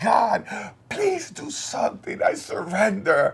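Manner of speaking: mock weeping, desperate. Retelling a desperate prayer to God: retelling a tearful prayer. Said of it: "And I started crying, crying, crying, like".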